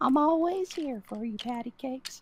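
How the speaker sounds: put-on very high old-granny character voice. During a dice game, another player says to do a granny voice; granny voice. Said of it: "do a granny voice".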